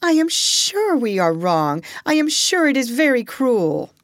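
imploring, beseeching voice. Narrator reads a woman pleading with a man before a cab ride, beseeching tone. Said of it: "beseeching tone".

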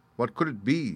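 ordinary delivery

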